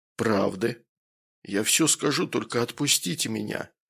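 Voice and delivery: ordinary delivery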